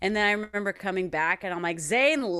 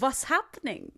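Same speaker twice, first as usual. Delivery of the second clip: slight, high-pitched, put-on Indian accent; 5 semitones higher than usual. Showing a listener how he would say it, imitating his little Indian-sounding accent. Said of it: "He would do that little accent".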